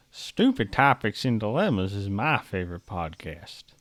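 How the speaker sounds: put-on very low, deep old Southern man voice. Doing a Morgan Freeman impression for a podcast promo line: Morgan Freeman impression. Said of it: "is Morgan Freeman saying what?".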